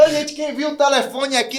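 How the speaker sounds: loud, high-pitched shout. Retelling calling out for a phone held in hand: retelling a loud shout. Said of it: "eu gritei bem alto".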